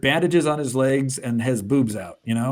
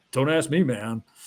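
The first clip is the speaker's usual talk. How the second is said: mock chill, laid-back character voice. Retelling a comic scene, voicing the hero: imitating a chill, laid-back character. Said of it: "This guy is so chill".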